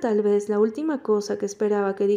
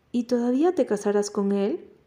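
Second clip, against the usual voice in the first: plain reading voice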